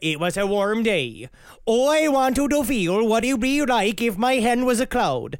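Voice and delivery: clumsy, rough, bad put-on Indian accent. Retelling how a man described his bus trip, in a bad Indian accent. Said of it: "I'm bad at this accent".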